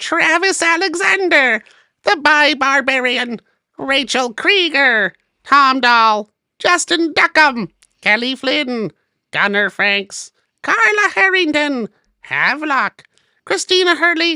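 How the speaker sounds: put-on alien voice, very high and loud. Reading out the names of patron producers in a put-on alien voice. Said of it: "should I be doing this in an alien voice?".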